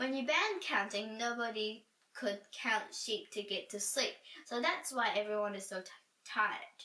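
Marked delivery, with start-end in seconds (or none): none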